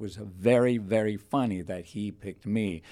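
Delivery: ordinary talk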